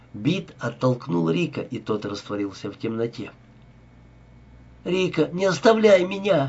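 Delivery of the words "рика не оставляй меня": high-pitched crying out. Reading Zoya's line as she tries to sit up, crying out. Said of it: "закричала Зоя".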